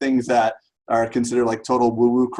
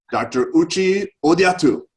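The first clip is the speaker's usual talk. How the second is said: higher voice, Japanese accent; 6 semitones higher than usual. Speaker says the guest's full name in a Japanese accent. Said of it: "I'm going to say it in a Japanese accent".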